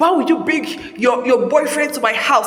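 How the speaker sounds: ordinary talk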